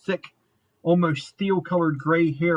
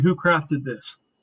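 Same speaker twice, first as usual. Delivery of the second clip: deep put-on voice. Speaker sets up a scene for a listener, voicing someone at the front door; deeper voice. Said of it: "in this deeper voice".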